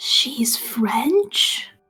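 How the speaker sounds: hushed, quiet whisper. Voicing Bunley, who leans over to Jimmy: whispering. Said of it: "Jimmy and whispers".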